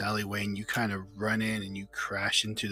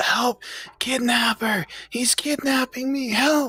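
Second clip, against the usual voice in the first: put-on very high, very loud, shrill, drawn-out child scream; 8 dB louder than usual. Narrator voices a character held up by the wrist, calling for help: screaming. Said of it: "He screams out".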